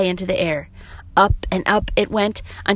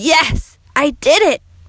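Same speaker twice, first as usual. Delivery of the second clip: excited, loud, high, very slowly drawn out; 7 semitones higher, 5 dB louder than usual. Narrator reads Max lying on the ground after climbing down, exclaiming with a rush. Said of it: "A rush came over him as he looked upward and exclaimed".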